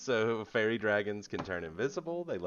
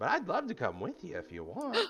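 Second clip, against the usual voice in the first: put-on tiny fairy dragon voice; 7 semitones higher, 5 dB quieter than usual. Voicing a tiny fairy dragon telling where he was born: Puck the fairy dragon voice. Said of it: "he says".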